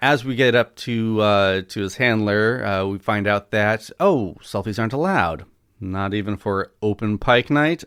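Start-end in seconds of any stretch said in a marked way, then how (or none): none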